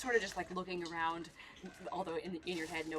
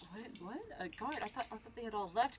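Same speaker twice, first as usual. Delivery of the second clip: startled, bewildered, caught-off-guard sound; 4 semitones higher than usual. Voicing a princess surprised to see a guard: surprised, confused princess. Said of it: "kind of look on her face".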